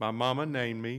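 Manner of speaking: ordinary talk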